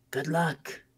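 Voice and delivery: breathy half-whisper. Speaking in character to the cat: half-whispering good luck. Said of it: "I whisper over to the cat".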